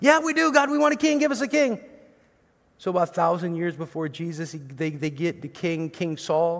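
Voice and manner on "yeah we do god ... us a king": put-on, very high, loud, clamouring screaming. Retelling how the people of Israel demanded a king: imitating people screaming out. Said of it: "how they screamed out".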